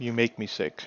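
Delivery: mock mumble under the breath. Retelling being told to go, speaker mumbles under the breath. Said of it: "I mumble under my breath".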